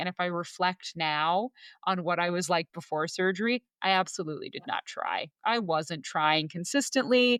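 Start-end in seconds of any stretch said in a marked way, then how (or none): none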